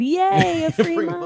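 very high, small, happy celebratory cheer. Retelling a celebration moment earlier: imitating own celebratory cheer. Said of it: "when I just celebrated and said".

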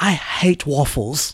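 bad put-on British accent. Retelling what Millie Bobby Brown said on a plane: terrible British accent. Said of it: "My terrible British accent".

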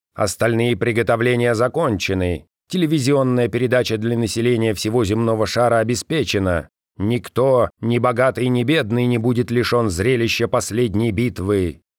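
plain

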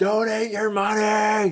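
mock shout at top of lungs, high and shrill. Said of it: "yelling at the top of your lungs".

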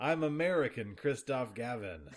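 put-on straight, plain American accent. Mocking a voiced German character's line: Christoph Gavin with American accent. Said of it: "speaks all of his lines with an American accent".

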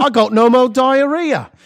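very high, shrill fake British accent. Joining in as friends do voices, in a put-on British accent. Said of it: "Why are you guys doing voices?".

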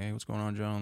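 friendly, relaxed, cheerful, easygoing tone. Retelling how a friend's dad greeted him at the door, imitating a smiling greeting. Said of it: "His dad answers and he's like smiling".

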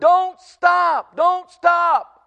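loud, high-pitched hollering.

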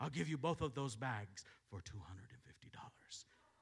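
put-on whispered aside. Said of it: "he spoke in a whisper".

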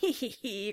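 slow, odd, gremlin-like giggle.

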